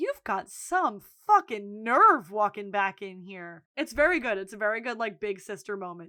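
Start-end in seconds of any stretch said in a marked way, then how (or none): 0.0-3.6 scathing, cutting scolding voice. Retelling a higher-up scolding someone in front of everyone: imitating someone telling off. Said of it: "tells Fiona off in front of everyone".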